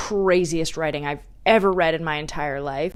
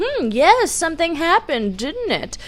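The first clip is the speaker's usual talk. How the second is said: mock-smug gloating, much higher and louder; 12 semitones higher, 4 dB louder than usual. Retelling how her arch nemesis reacted, mock-smug. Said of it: "He's kind of smugly saying".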